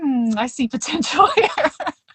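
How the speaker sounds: amused delivery with a laugh.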